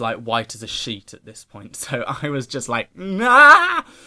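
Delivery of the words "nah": high, loud freaked-out cry. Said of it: "I was freaking out".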